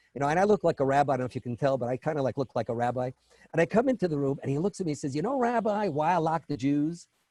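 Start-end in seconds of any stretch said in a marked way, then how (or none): 5.2-7.1 thick, slow, deep Southern drawl. Retelling what a man said when the speaker came into the room, deep Southern accent. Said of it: "had a deep Southern accent".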